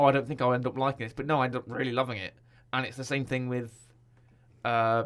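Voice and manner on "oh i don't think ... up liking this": normal talking voice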